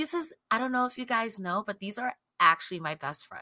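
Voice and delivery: very quiet, flat, ditzy monotone drone. Acting out how a woman sounded, under the top, imitating a woman's ditzy monotone. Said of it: "there was a ditzy monotone about her".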